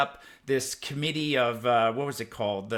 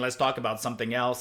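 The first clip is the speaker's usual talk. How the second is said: ordinary talk, nothing marked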